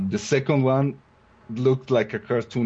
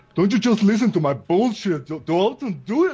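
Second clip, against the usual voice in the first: put-on heavy Scottish burr, pitched very high; 9 semitones higher than usual. Quoting what a man once told the speaker; thick Scottish accent. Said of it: "with his thick Scottish accent".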